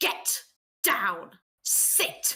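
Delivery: furious, barking gnome voice. Player yells at a wolverine in the game, in angry Spriggan gnome voice. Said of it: "in my best angry Spriggan gnome voice".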